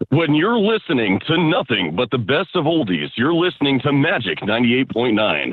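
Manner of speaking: radio announcer voice. Asked for their voice-audition go-to, a speaker shows off a radio announcer voice. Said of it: "That's my go-to radio voice".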